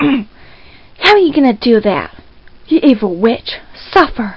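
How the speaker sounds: snooty, uppity, superior villain-like delivery. Auditioning for the role of Nina: deeper, uppity Nina voice. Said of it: "it's deeper uppity at the same time".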